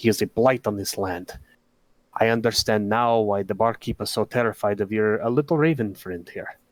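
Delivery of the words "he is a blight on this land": very quiet, hushed, low voice. A narrator voicing a man who leans in to speak, leaning in, real quietly. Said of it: "He kind of leans in real quietly".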